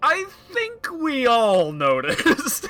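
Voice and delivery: very high, slow, offended indignation. Speaking in character while looking at another character: indignant. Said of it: "look at him indignantly and".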